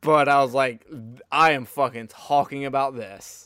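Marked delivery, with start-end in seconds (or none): none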